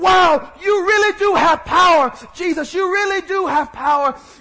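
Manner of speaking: excited, amazed gush of awe. Acting out a father watching Jesus heal a woman: excited Jairus voice. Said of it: "he's excited".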